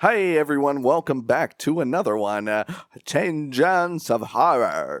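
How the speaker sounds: put-on old-time 1920s radio announcer voice. Opening a podcast episode and greeting listeners, as an old-timey 1920s radio announcer. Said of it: "I sound like an old timey nineteen twenties radio guy".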